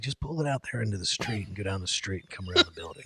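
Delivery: quiet, hushed, low whisper. Retelling what he was told at the arena about the rental bike, whispering. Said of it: "Chad was like whispering to me".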